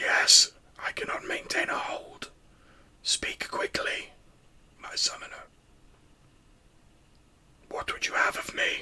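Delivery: strained, laboured, breathy ghostly whisper. Voicing a summoned spectre that cannot remain: pained, laboured spectre voice. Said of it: "it now sounds slightly pained and laboured".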